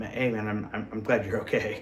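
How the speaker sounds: usual speaking voice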